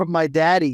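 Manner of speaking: normal talking voice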